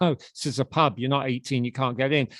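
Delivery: ordinary talk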